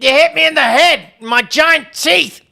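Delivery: loud, high, bellowing creature voice. Playing a saber-toothed creature hit by a thrown rock, in the saber-toothed Godfrey voice. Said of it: "every time I do this voice".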